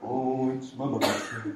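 slow, soft, gloomy, drawn-out drawl. Speaker recalling Eeyore's birthday episode, doing an Eeyore impression. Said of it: "I can impersonate him a lot better".

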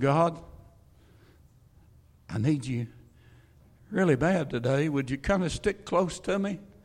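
very low, deep, hushed half-whispered murmur. Acting out a sudden prayer to god in a lowered, half-whispered voice. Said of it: "Now notice I lowered my voice".

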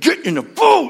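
drawn-out, rough, forceful, very high-pitched and slow. Acting out how Jesus ordered the disciples into the boat: imitating a forceful command. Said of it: "It's that forceful".

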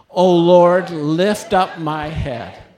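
loud, high-pitched, very enthusiastic delivery. Leading a group in reading a psalm aloud, with more volume and enthusiasm. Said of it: "say it with a little bit more volume and enthusiasm".

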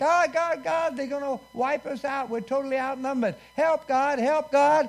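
acted-out desperate cry. A preacher retells a besieged king crying out to God: acting out a desperate cry. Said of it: "He cried out to God".

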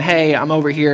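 plain

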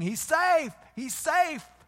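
loud, high-pitched screams.

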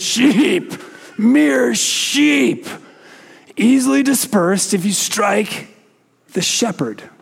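high, yelling tyrant king voice. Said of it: "interrupts him by yelling".

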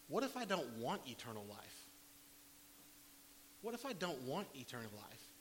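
plain

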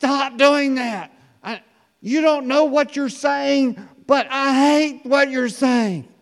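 very high, very loud, shrill shouting outburst. Retelling a person with hands over their ears telling the speaker to stop: imitating a loud voice. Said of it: "in a loud voice says".

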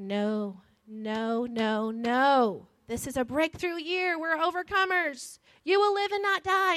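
mock slow, rising shout with "no" stretched long. Retelling shouting into a sister's face to bring her back: imitating own shouting. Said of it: "I'm shouting in her face".

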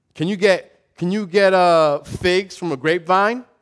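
put-on sarcastic tone. Retelling a scripture passage as James speaking: imitating James being sarcastic. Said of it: "James is just being sarcastic".

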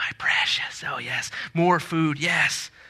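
breathy whisper like a lurking creature. Describing how grabbing guests would talk, doing a Smeagol voice. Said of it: "And like Smeagol, what they say is".

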